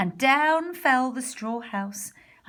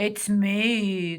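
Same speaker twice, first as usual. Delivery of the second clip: sly, growling voice with "me" drawn out; 3 semitones lower than usual. Narrator reading a voice answering the little pigs at the door, sly growl. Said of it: "growled a sly voice".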